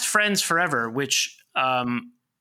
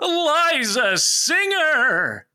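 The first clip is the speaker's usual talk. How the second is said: showy announcer voice, pitched very high; 12 semitones higher, 4 dB louder than usual. Introducing the special guest by full name, SNL announcer voice. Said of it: "in the SNL voice".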